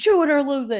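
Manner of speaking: loud, high-pitched yell. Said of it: "He starts yelling at everybody".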